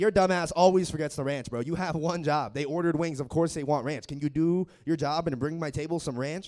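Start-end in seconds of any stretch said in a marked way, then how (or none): none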